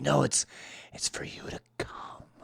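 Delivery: slow, drawn-out, barely audible hushed whisper. Retelling what the hospital receptionist whispered: imitating someone whispering. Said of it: "then she started, like, whispering".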